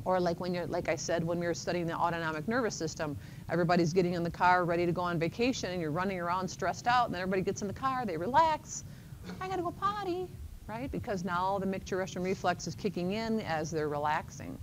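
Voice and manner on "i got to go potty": put-on very high-pitched childish little-kid voice. Voicing someone who just got in the car for a vacation, childish voice. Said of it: "(CHILDISH VOICE)".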